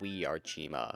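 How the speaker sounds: super deep, robotic, machine-like voice. Imitating a mysterious show character's line in battle: imitating a super deep robotic voice. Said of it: "He had this super deep and robotic voice".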